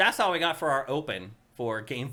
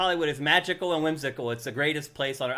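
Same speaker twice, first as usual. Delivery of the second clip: ordinary delivery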